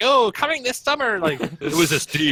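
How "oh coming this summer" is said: cheery, very high-pitched, happy commercial voice. Talking about a pony trailer, mocking toy ads by imitating a really happy female voice. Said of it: "really happy female voice trying to sell toys".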